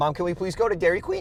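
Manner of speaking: pitch rising toward Dairy Queen. Demonstrating a request that sounds childish: pitch rising toward the end. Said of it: "we'll go up in tonality".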